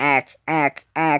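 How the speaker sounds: put-on space-invader alien voice. The speaker says 'ack, ack, ack' as a Mars Attacks alien voice impression. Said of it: "That is my impression of Mars Attacks".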